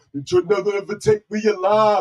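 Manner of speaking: very loud, high-pitched yell at full blast. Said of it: "stop doing it in the [name] voice".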